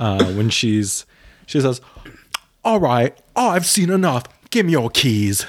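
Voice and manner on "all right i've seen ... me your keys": put-on Australian accent, much higher. A speaker quotes a makeover-show host, Tabitha impression with Australian accent. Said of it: "I'm good at an Australian accent".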